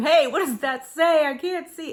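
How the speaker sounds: loud, high yell. A wife acts out how she talks to her husband, deaf in one ear, retelling a yell. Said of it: "I'm yelling at him".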